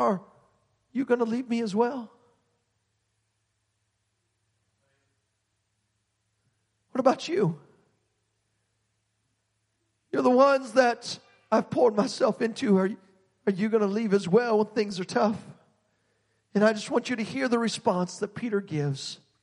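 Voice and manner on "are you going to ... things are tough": acted-out, performed pained voice. Retelling what he said to his twelve disciples after others left; retelling pained words. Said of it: "you can almost hear the pain in his voice".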